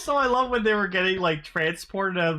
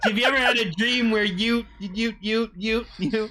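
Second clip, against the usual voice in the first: put-on child voice stammering, stuck repeating "you"; 4 semitones higher than usual. Teasing a friend whose talk sounds like that dream kid: imitating the stuttering dream kid. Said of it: "that dream kid who stutters the whole thing".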